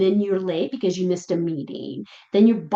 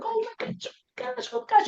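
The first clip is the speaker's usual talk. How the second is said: very high, frantic, overexcited dog voice; 4 dB quieter than usual. Describing a dog jumping at a passing bike: voicing a dog freaking out. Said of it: "and then they start jumping".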